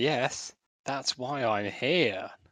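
very slow, drawn-out, dry sarcastic delivery. Answering a man who doubts they are a journalist: sarcastic. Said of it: "I'm just very sarcastic".

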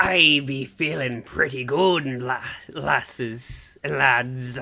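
pirate character voice. Guest answering the hosts' how-are-you greeting on the show: pirate voice. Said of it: "work up my pirate voice".

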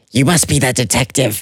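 hushed, muttered hiss under the breath. Narrator voices a librarian answering the detective: hissing under her breath. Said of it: "The librarian hisses under her breath".

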